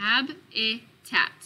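"habitat" split into slow, separate syllables.

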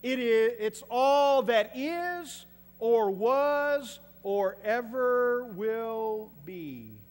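very slow, loud, solemn, dramatic reading.

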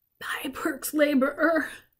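strangled whisper. Narrator reads Lena answering the mayor, in a choked whisper. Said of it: "Lena said in a choked whisper".

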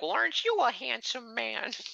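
put-on fussing old lady voice, very high-pitched. Imagining an old lady pinching a man's cheeks, imitating an old lady. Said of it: "some old lady goes up to him and pinches his cheeks and is like".

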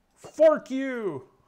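yelling in a character voice. Yelling while attacking with a trident in a game, yelling a battle cry in character. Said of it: "That's what he's gonna yell every time".

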